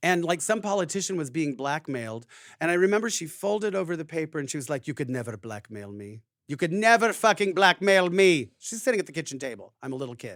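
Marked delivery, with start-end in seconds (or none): 4.9-8.5 put-on Transylvanian-sounding accent. Recalling mom at the kitchen table with the newspaper, Transylvanian-sounding mom impression. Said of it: "my impersonation of her sounds Transylvanian".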